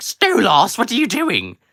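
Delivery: very high, loud, swooping character voice. A streamer shows viewers how they voice a character: Stella character voice. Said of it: "I pitched my voice up for Stella".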